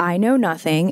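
ordinary talk, nothing marked

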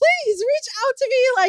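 put-on begging voice. Retelling how she once begged someone: imitating herself begging. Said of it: "literally being like".

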